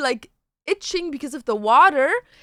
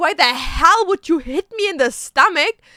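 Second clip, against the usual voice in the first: anguished, pained screaming outburst; 2 semitones higher, 3 dB louder than usual. Retelling what the speaker screamed at Dantes while in pain, retelling a scream. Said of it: "Now I'm screaming at Dantes".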